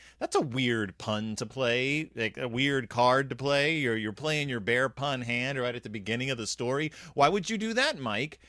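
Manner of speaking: ordinary talk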